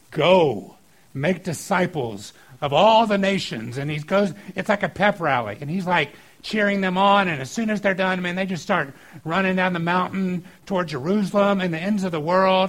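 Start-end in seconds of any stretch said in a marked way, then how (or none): 0.1-3.7 very slow, big, booming, proclamation-style voice. Retelling Jesus speaking to the crowds on the mountain, in Jesus's big booming voice. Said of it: "in his big booming voice".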